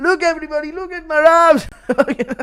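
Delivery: mock drunken, bullying voice. Doing a requested impression of drunk Connor bullying Marab: impression of drunk Connor. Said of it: "impression of drunk Connor bullying Marab".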